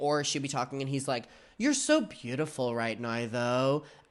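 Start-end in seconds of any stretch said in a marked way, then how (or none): 1.6-3.8 snide, condescending, passive-aggressive tone. Retelling Todd's reply while Tana was talking: imitating Todd's passive-aggressive tone. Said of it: "incredibly passive-aggressive".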